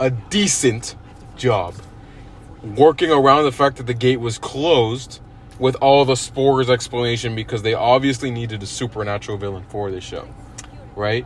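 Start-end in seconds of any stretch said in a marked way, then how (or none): 0.0-1.8 decent stressed, drawn out, pause before job. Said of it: "I'm gonna emphasize this word".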